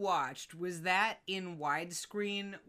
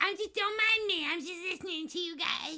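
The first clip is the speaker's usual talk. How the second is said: squeaky, very high, silly pet voice; 12 semitones higher than usual. Describing the pet sitting nearby, speaker gives its imagined lines: voicing Donut the pet. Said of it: "Donut has cannon voice, and it sounds like this".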